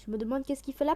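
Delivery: fast, overexcited, rushed talk.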